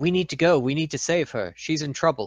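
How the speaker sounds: loud hushed voice. Urging companions in character to go save a woman: loud whisper. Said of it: "I whisper, like, quite loudly".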